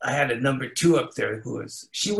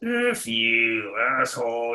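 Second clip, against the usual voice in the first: bumbling, grumbling low voice. Retelling what people muttered passing the front door: imitating muttering under breath. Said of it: "they'll bumble under their breath".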